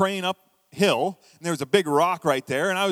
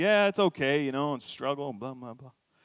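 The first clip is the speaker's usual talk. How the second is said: mock glum, downcast voice, lower and quieter; 5 semitones lower, 5 dB quieter than usual. Retelling his answer to the receptionist, head down: imitating own glum reply. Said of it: "And I head's down like this".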